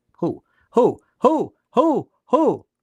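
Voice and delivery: slow, high owl hooting. Addressing viewers of a video, repeating one word, owl-like hooting. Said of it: "I sound like a like a like an owl".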